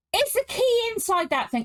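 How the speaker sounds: sudden, blurted, high-pitched shout. Asking excitedly whether the key is inside the device: shouting. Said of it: "I'm sorry, I just shouted".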